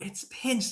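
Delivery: high, hushed, secretive whisper under the breath. Retelling a movie scene, imitating Squints whispering. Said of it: "and he's whispering".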